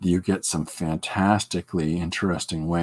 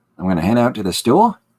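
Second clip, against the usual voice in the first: statement ending with a rising question lilt on "store"; 4 semitones higher, 7 dB louder than usual. Describing how an australian ends sentences, pitch rises on store. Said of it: "There's a an upturn end of uh, a sentence, so it almost sounds like a question".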